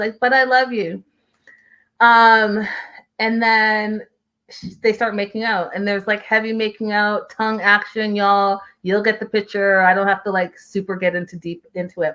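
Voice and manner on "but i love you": calm, soothing, placating tone. Retelling a couple's argument in a car: imitating a defusing voice. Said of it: "that voice".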